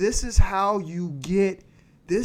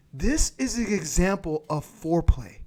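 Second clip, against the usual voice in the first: ordinary talk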